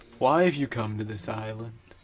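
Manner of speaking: low, bland villain voice. Voicing Vezok questioning a Toa: Vezok voice. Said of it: "we gave him this voice".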